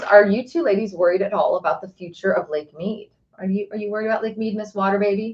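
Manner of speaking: ordinary delivery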